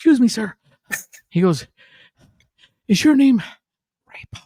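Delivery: acted breathless whisper. Retelling a fan running up at a Pizza Hut: imitating a breathless whisper. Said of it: "why are you whispering?".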